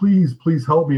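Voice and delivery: imitated old, crackly voice. Retelling a scene where a phone voice pleads for help: imitating an old crackly voice. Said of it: "in this, like, old crackly voice".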